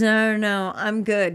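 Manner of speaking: nervous, croaky, croaked voice. Retelling his answer to an offer of a drink: imitating a croaked reply. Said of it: "kinda croaks out of his voice".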